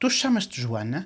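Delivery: rising question intonation on the name. Explaining portuguese questions use only intonation, rising question intonation. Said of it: "Like, are you called Joanna? ... just intonation".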